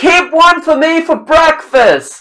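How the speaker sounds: very high, loud yell called upward. Voicing Tom calling up for an egg for breakfast: screaming up to others. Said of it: "Tom screams up".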